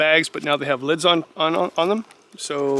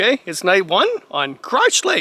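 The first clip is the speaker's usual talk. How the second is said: giggling through the words, giggly swooping voice; 4 semitones higher than usual. Narrating a camping trip, saying the lake's name: giggling. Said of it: "I'm giggling every time I say that".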